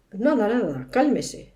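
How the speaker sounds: ordinary delivery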